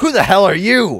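high, loud, snarling rat creature voice. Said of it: "and he says".

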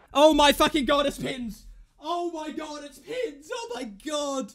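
loud, drawn-out, trembling, thrilled disbelief. Player panicking during a game, shaking with excitement. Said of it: "I'm fucking shaking".

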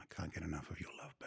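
very soft, hushed, under-the-breath voice.

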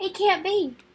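high, sputtering, spluttering outburst. The king, after Rumpelstiltskin gives him six noses, spluttering. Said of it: "the king spluttered".

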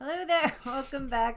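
very loud, high, bright, grinning voice. Greeting the viewers at the start, smiling while talking. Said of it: "Why are you smiling again?".

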